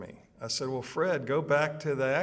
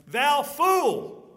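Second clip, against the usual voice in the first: very high, forceful, raised outburst; 13 semitones higher, 8 dB louder than usual. Retelling what God said to the man, with a raised voice. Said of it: "why did I just raise my voice there?".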